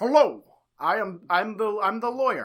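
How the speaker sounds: put-on very serious man voice. Acting out a very serious looking lawyer from the show: Roger Milton voice. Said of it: "a very serious looking man enters".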